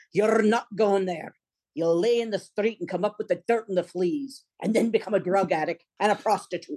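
very thick brogue, laid on heavy. Recalling a father refusing to allow new york drama school, thick brogue. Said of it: "with his very thick brogue".

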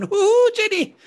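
put-on little Irish voice, very high and loud. Speakers riff on a made-up little sidekick; little irish sidekick voice. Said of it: "a little Irish sidekick going".

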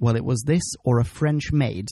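plain

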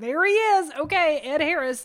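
resigned sighing delivery.

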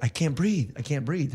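ordinary delivery

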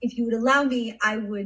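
ordinary delivery, nothing marked

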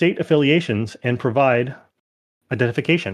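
machine-like, robotic female announcement voice. Voicing a voice over the room's speakers, in a robotic feminine voice. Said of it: "a kind of robotic but feminine voice".

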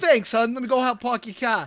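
put-on Boston accent. Acting out a guy who had a Boston accent. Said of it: "the guy had a Boston accent".

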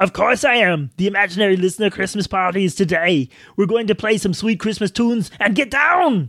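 put-on Austrian actor impression voice. Answering someone surprised to see you at the imaginary listener Christmas party, Arnold Schwarzenegger impression. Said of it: "former California governor and star of the perennial holiday classic Jingle All the Way".

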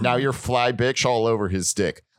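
ordinary talk, nothing marked

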